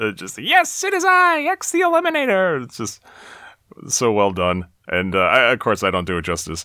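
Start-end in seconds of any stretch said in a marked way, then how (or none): 0.4-2.6 very high, slow, whiny voice. Recapping a movie and praising an actor's voice for a character; Peter MacNicol's X the Eliminator voice. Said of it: "this kind of a whiny, high pitched".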